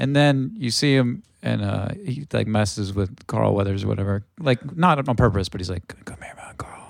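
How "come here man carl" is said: hushed, unvoiced whisper. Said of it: "he's, like, whispering to him".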